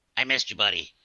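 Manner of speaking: close, intimate stage half-whisper. Voicing a character who half-whispers in a player's ear: half-whispering in the ear. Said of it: "you hear this whisper in your ear".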